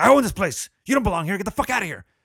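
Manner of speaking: play-acted loud, high-pitched screaming tirade. Retelling how a man yelled at some guys at a driveway: retelling a yell. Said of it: "And he's yelling at him".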